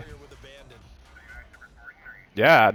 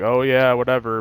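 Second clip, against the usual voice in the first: plain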